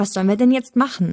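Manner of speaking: ordinary delivery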